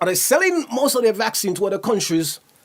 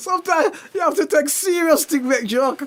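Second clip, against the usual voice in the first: cracking up with laughter, higher; 7 semitones higher than usual. Joking about a weird position on a video, laughing while talking. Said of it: "I'm cracking up".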